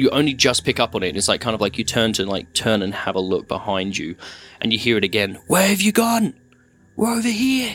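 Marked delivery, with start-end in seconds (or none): 5.5-7.8 high-pitched, desperate calling. Game master voicing voices the player hears behind them near the cave, desperate calling voices.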